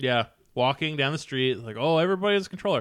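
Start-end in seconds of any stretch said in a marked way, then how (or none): 1.8-2.8 put-on, pitched-up, sarcastic, mocking jeer. Podcast host mocking a TV show they now hate: mocking a TV show character. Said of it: "I don't know why I'm mocking it".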